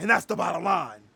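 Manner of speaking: loud, declaiming wrestler ring-promo delivery. Talking about companies cutting costs to the bottom line: Stone Cold impression. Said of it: "That was a bad Stone Cold impersonation".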